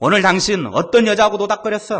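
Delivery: high, loud, angry scolding.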